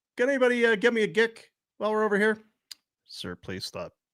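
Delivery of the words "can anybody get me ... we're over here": shouting, higher pitch. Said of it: "Stop yelling gic".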